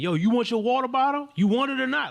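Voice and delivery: very high, goading, confrontational yell with rising pitch. Retelling what the man with the truck yelled, imitate a confrontational yell. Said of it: "he's sounding confrontational".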